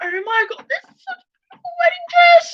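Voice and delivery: high, fast, overcome tearful gush. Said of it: "I'm crying now".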